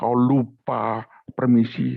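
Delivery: intimidating, menacing put-on devil voice. Joking in a meeting about a voice heard during the last answer, put-on intimidating devil voice. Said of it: "ada suara mengintimidasi".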